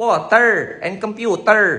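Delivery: put-on slow Filipino accent. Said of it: "They say".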